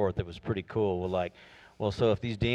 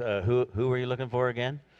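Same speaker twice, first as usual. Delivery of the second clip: mock sarcastic tone; 4 semitones higher than usual. Retelling the scene after the soldiers fall to the ground, retelling a sarcastic question. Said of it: "And then I think sarcastically".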